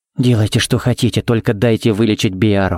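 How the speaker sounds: plain reading voice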